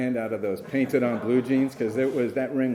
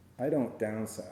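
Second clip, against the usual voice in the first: mock-deadpan delivery, lower and quieter; 2 semitones lower, 8 dB quieter than usual. Retelling a woman's reply to your offer of a ring, imitating her deadpan reply. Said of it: "she looked at me deadpan and she goes".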